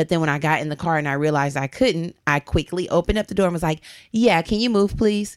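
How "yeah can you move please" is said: put-on snippy, impatient, curt, bitchy tone. Retelling asking a driver to move the car: imitating own bitchy tone. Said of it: "kinda bitchy".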